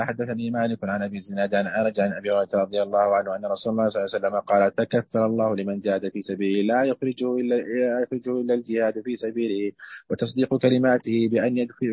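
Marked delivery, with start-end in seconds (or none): none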